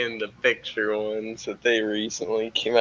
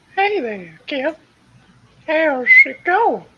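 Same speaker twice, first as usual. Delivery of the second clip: put-on old man voice, higher and louder; 8 dB louder than usual. Greeting another speaker in a put-on voice: Herbert from Family Guy voice. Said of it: "you sound like the dude".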